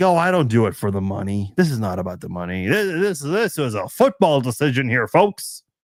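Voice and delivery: sarcastic, mocking, insincere voice. Mocking how people in sports lie about their decisions: mocking people in sports who lie. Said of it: "when they lie, when they're like".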